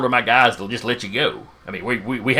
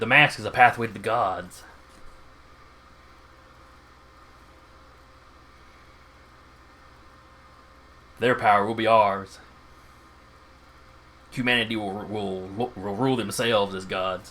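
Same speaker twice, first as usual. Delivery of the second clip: fanatical, zealous, preaching tone; 4 dB quieter than usual. Voicing a masked villain over the comm unit: fanatical voice. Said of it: "He sounds a little fanatical".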